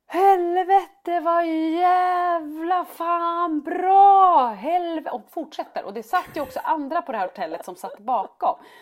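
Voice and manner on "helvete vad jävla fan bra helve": put-on child's shout, higher and louder. Retelling how Frasse shouted swear words when the goal came: imitating a child shouting. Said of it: "så skriker han så här".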